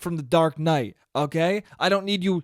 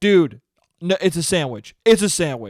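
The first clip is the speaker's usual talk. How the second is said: put-on, pushy, aggressive, insistent know-it-all tone. Retelling how someone answered his hot dog question during a game: mimicking an aggressive reply. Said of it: "aggressively like".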